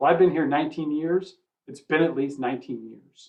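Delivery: imitated deadpan, flat put-on delivery. Retelling the CFO's answer to the CEO, imitating a deadpan reply. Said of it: "the C F O deadpan back".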